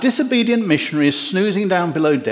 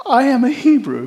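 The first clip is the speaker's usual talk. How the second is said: rather devout, pious, holier tone, a bit higher; 7 semitones higher than usual. Telling the story of Jonah, voicing his reply to questions: pious Jonah voice. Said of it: "Don't know why I do that voice".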